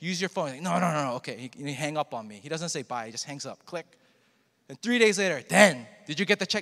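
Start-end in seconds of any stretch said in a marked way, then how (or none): 5.5-6.6 put-on Korean accent. Telling about a man who calls about a check, imitating his korean accent. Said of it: "That's his accent".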